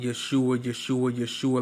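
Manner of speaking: ordinary talk, nothing marked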